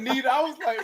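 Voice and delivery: plain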